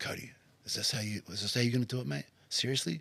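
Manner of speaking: soft, hushed whisper. A leader explaining how he likes to be motivated while training, whisper in the ear. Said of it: "a good whisper in the ear".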